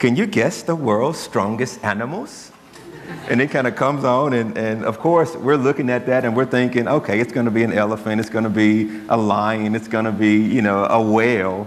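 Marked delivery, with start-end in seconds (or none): 0.0-2.5 clumsy, really bad put-on British accent, documentary narrator style. Speaker quotes a guy from a TV show, in a really bad British accent. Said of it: "a really bad imitation of my British voice".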